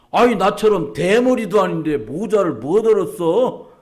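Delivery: Chungcheong regional dialect speech. Retelling what a man said at the bakery, in Chungcheong dialect. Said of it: "충청도 사투리".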